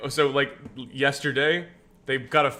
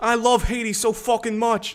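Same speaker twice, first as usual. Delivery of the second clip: put-on New York accent, pitched very high; 9 semitones higher, 4 dB louder than usual. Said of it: "That's what she would say".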